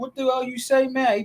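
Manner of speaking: acted, high, furious top-of-the-lungs yell. Speaker retells a man yelling at another guest on the show, retelling a yell at the top of lungs. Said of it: "yelling at the top of his lungs".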